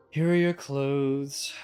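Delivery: dry, flat and disappointed. Redoing a character's line in the intended voice, dry, disappointed tone. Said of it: "It's supposed to be a very dry and like disappointed tone".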